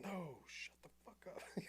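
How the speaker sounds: very high, keyed-up, drawn-out scream. Retelling yelling at a tackled suspect over the radio, imitating own screaming. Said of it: "you're screaming this over the net?".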